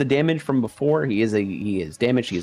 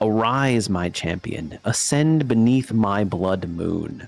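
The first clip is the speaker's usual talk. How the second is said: slow, drawn-out, demonic, echoing voice; 3 semitones lower than usual. Narrator voices Crimson Rose addressing her champion: Crimson Rose's demonic echoing voice. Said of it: "a demonic female voice echo".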